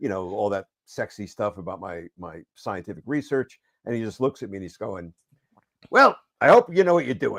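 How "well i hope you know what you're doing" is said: pitch raised very high, swinging widely. Retelling Stan's reply after you explained the reasons for changing Daredevil's costume, do a Stan impersonation. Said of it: "pretty good impersonation though".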